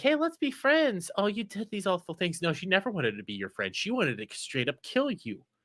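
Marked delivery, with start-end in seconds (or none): 0.0-2.4 put-on cheery, friendly, sweet smiley voice, pitched up. Describing the poison Hashira at first sight, imitating a smiley character. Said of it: "she's all, like, smiley".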